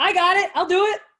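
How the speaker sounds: very loud, high, bursting with eager enthusiasm. Asked to hear more enthusiasm, showing Lauren how to say it: enthusiastic. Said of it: "Let's hear more enthusiasm on that".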